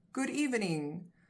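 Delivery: ordinary talk, nothing marked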